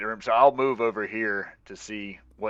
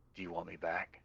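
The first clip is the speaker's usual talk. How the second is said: slight, barely-there, very hushed half-whisper; 3 semitones lower, 14 dB quieter than usual. Casting an illusion to half-whisper behind a character's ear: slight half-whisper. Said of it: "I'm gonna slightly whisper behind his ear".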